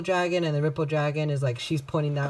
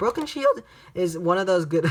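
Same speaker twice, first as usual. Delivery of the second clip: voice cracking and breaking mid-line; 3 semitones higher than usual. Presenting cards from a card game, the speaker's voice cracks: voice cracking. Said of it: "voice crack".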